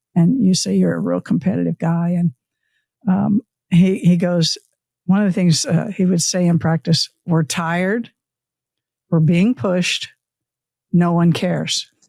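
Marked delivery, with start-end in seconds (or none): none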